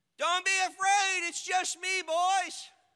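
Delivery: calling out high and loud.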